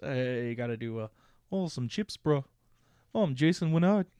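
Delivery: put-on New Zealand accent. Asked by the other speaker to show how he'd say it, New Zealand accent. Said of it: "Do it in New Zealand accent".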